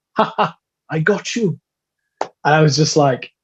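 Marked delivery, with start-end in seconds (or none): 0.1-1.5 slow, high, drawn-out little chuckling laugh. Retelling the grandmother teasing after the wheelchair bumped: imitating a little laugh. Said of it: "just gave a little laugh and went".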